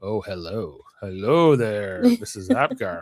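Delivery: creepy, slow, swooping, drawn-out sing-song tone. Retelling a scene where Riker greets Missus Apgar: creepy Riker impression. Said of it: "Oh, it's so creepy".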